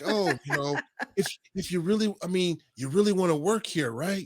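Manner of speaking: patronising, condescending, talking-down tone. Retelling a backstage pep talk: imitating CM Punk's condescending tone. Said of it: "he said it just in that tone too".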